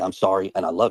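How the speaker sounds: ordinary talk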